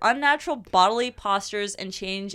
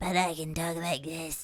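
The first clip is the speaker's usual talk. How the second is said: put-on possessed voice, quieter; 3 semitones lower, 6 dB quieter than usual. Joking about possession during talk of changed voices: put-on possessed voice. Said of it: "This is me when I'm possessed".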